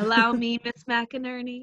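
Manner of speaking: heavily smoldering, gallant tone. Retelling how a character offered his hand: smoldering voice imitating Oliver. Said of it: "he didn't quite say it with that much smoldering in his voice".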